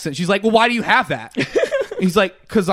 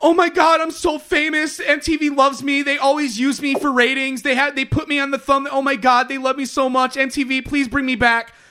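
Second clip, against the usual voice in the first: put-on tearful, high-pitched pleading outpour with crying; 7 semitones higher than usual. Retelling a girl crying over being on the thumbnail: imitating someone crying. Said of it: "crying, going, like".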